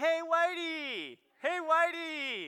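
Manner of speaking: high, loud, slow, drawn-out yell.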